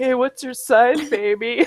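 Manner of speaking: cheesy delivery ending in rising pitch. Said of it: "It was just, like, a thing".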